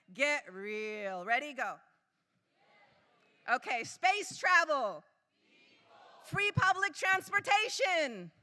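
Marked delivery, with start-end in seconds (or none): 0.2-1.3 put-on very bored teenager voice, low and flat. Game catchphrase delivered on cue, like a very bored teenager. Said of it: "say it like a very bored teenager".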